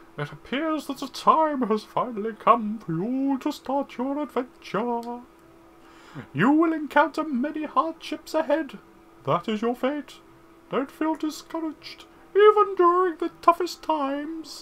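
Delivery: loud, very high, squeaky, silly owl voice. Trying out voice acting, playing an owl guide, stupid owl voice. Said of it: "I'm gonna regret having done this voice".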